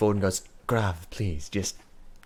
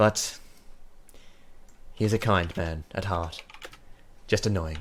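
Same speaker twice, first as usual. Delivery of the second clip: weary, sighing elf voice with tired exhale; 4 dB quieter than usual. Voicing an elven cleric after a sigh: sighing elf cleric voice. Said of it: "sighs, she goes".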